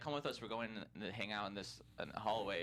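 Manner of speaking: normal talking voice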